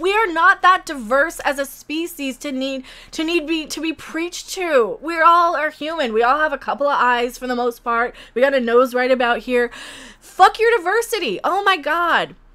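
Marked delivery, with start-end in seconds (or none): 10.2-11.4 high, exasperated, fed-up ranting yell. Talking to viewers about a show trailer, yelling. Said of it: "So I'm yelling about this".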